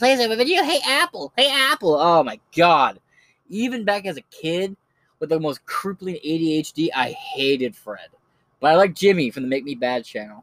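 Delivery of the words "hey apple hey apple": very high-pitched, cartoony voice. Recalling old online videos: Annoying Orange voice. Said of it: "You just hear the Orange's voice".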